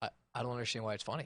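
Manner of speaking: put-on, very low, utterly flat deadpan. Retelling how a wife reacted to a joke: imitating someone deadpan. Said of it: "she was very deadpan and looked at me".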